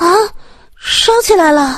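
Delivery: thin, soft-spoken. Yuwen Nian, standing to one side, suddenly speaks up in a soft, thin voice. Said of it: "宇文念突然细声细气地说了一句".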